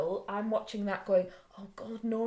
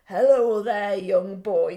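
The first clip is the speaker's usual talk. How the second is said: put-on weird drunk voice, louder; 11 dB louder than usual. Retelling how a really drunk man greets a boy: imitating drunk Lampy. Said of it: "in a bit of a weird sort of".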